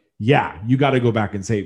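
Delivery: normal talking voice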